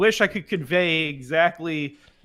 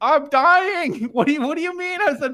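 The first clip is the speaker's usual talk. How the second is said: plain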